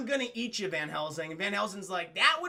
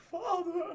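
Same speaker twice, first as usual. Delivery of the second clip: put-on, very high, heartfelt, emotional monster voice; 10 semitones higher than usual. Retelling the monster caressing his father's cheek: mock emotional Frankenstein's monster line. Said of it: "it's a very emotional moment".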